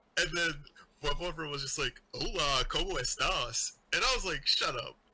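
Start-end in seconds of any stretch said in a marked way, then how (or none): 2.2-3.8 mock American-accented Spanish, slower. Speaker retells a boyfriend teasing the speaker's Spanish: mock American accent Spanish. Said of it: "my Spanish sounded like an American".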